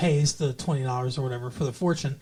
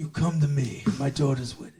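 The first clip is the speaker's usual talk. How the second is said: muffled, mushy speech as if cotton-filled mouth. Trying to quote The Godfather after praising another actor's impression: Marlon Brando Godfather impression. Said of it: "I can't do it".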